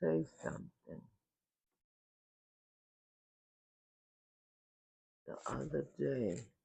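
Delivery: very soft, hushed, quiet speaking. Beginning to tell a story, the speaker is talking low. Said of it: "here I am talking low".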